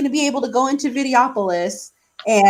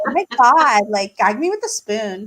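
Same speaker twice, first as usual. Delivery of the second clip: put-on Valley girl voice. In a chat, the speaker channels her inner Valley girl voice. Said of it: "channel my inner Valley girl".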